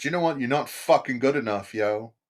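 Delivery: put-on judgmental voice. Voicing religion as it looks at a person: voicing religion judging you. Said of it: "It just looks at you as a person all the time and says".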